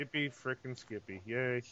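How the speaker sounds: very soft, flat, joyless, unexcited deadpan cheer. Greeting the hosts at the start of the show: Wade impersonation. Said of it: "I was doing my Wade impersonation".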